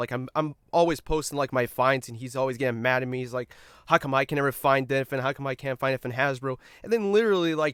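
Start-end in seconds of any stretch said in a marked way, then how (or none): none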